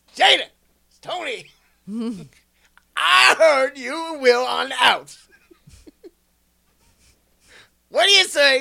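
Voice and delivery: terrible shrill put-on voice, very high and loud. Retelling what a man said to Jada: high-pitched Chris Rock impression. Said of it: "trying to do a high-pitched Chris Rock".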